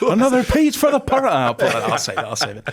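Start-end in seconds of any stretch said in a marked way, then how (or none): 0.0-1.3 put-on Irish accent, higher. Repeating a commentator's goal call phrase: imitating an Irish accent. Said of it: "Was that an Irish accent there".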